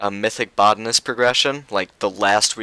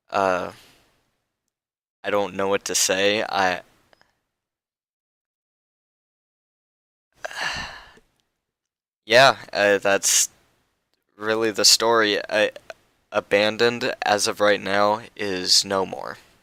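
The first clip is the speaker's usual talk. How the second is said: emotional voice, choked up. Telling how the old guild came to an end, getting emotional. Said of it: "I'm getting emotional right now".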